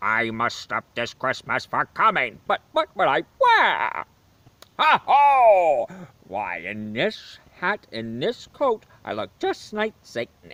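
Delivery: belted storybook character voice, "ho" stretched out. Show off your good impression from the movie: Jim Carrey as the Grinch. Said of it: "I do a good impression of Jim Carrey as the Grinch".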